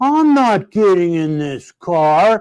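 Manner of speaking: acted, slow, drawn-out, whiny voice. Retelling a refusal to get into the coffee-stained car: imitating Frank whining. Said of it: "He was like whining".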